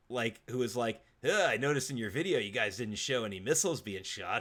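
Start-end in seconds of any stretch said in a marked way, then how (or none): 1.2-4.4 sarcastic, needling, complaining fatherly tone. Retelling a dad's remark about the kids' video: imitating a sarcastic dad. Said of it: "the sarcastic dad".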